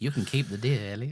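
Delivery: creepy, sleazy voice. Quoting the game character David's lines, creepy David voice. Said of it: "he does have a pedo voice".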